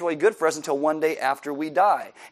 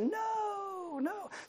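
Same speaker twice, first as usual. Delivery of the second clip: put-on very high, very soft little-kid voice, drawn-out no; 13 dB quieter than usual. Retelling kids answering a question about heaven, imitating little kids. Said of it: "That's my impersonation of little kids".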